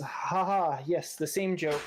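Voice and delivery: dry, wry chuckle while speaking. Game master voicing a character who chuckles at the player, dry chuckle while speaking. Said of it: "He chuckles at you dryly and says".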